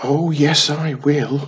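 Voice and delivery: eager, loud excited shout, stretched very slowly. Reading a story, Wiz answers the challenge to get there first: shouting excitedly. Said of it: "shouted Wiz excitedly".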